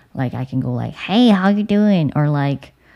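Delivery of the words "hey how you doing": high, loud, silly, goofy cartoon voice. Thinking about going into voice acting, speaker shows off a very cartoony voice. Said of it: "my voice can sound very cartoony".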